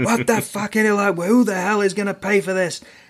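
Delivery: shrill, high-pitched screaming. Telling a car-crash story, acting out a man screaming at the driver. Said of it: "he's already screaming at the driver going".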